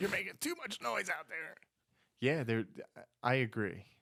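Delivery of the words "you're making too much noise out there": mock screaming, higher pitch. Imagining a parent calling a teen home: imitating dad screaming. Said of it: "Like dad".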